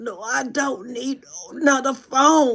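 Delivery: mock strangled, high, choked-up, choking voice. Retelling turning down the offer of a new phone: imitating a quiet, choked-up reply. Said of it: "I was, like, choking".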